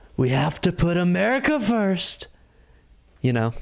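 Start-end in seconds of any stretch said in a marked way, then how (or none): 0.2-2.3 weirdly inflected, bizarre speechmaking cadence. Imitate how a man sometimes sounds when giving a speech, with really bizarre inflections. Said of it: "the real s- bizarre inflections".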